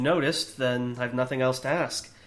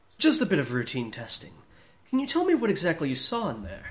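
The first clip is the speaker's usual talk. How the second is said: put-on, swooping, fancy posh voice; 3 semitones higher than usual. Voicing a character questioning someone in a scene, in a fancy voice. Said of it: "do your fancy voice".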